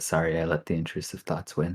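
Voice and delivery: acted soft, hushed, half-whispered stage whisper. Playing a character who leans over to Briar to apologize: half-whispering in character. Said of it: "just sort of whispers to Briar and says".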